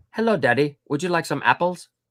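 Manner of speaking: put-on British accent. Retelling a friend's impression of a TV show; Full House impression. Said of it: "Were you British?".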